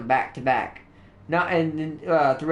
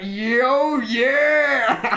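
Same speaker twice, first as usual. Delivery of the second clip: high, long, stretched-out casual yo; 9 semitones higher, 4 dB louder than usual. Retelling a cartoon scene where the Kool-Aid guy bursts in: Kool-Aid Man voice. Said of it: "the Kool-Aid guy comes in and he's like".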